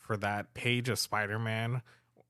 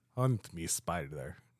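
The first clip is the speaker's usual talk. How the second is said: put-on Russian accent, lower pitch; 5 semitones lower than usual. Redoing the line because the other speaker insists on it: Russian accent. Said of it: "you have to do it with a Russian accent".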